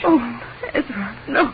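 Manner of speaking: high, tearful voice, crying through tears. Answering a man who says he won't die where he was born, crying. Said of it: "Rachel, please don't cry".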